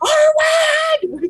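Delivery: high, far-carrying yell at full pitch. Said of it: "I'm just gonna yell".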